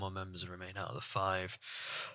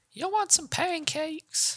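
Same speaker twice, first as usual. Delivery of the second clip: put-on lady voice, higher. Imitating the lady from the Family Guy opening offering pancakes: Family Guy pancake lady voice. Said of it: "reminds me of that lady from that Family Guy opening".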